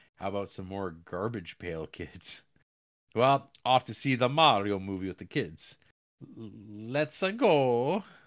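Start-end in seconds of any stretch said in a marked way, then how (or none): 6.4-8.0 high, cheerful, chirpy cartoon Italian accent. Reading out a message about seeing the Mario movie with the kids: Mario voice. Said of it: "In a Mario voice".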